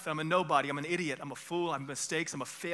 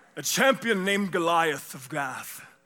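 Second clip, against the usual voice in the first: put-on not-quite-British accent, louder; 8 dB louder than usual. Telling the Goliath story aloud, in a Charlton Heston-style voice. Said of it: "It's not quite a British accent, but it's like a Charlton Heston".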